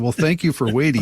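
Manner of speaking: ordinary talk, nothing marked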